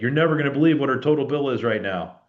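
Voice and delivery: easy, relaxed call-out, like hailing across a distance. Retelling how a client yelled at him across the lake, retelling a yell. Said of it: "he kind of yelled at me across the lake".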